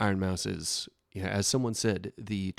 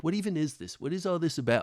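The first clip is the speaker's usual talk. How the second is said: feigned bewilderment, high-pitched and puzzled; 8 semitones higher than usual. Mocking people who act confused about online creators: mock-confused voice. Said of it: "where they just act so confused".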